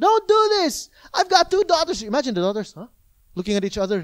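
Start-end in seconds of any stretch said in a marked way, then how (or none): 0.0-2.0 very high, loud, full-lunged scream. Retelling what a father screamed at the top of his lungs, retelling a man screaming. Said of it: "So he's screaming at the top of his lungs".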